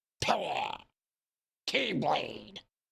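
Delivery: rough, creaky, strangled throaty voice. Imitating a game character's line: voice stuck in his throat. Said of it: "it sounds like it's stuck in his throat".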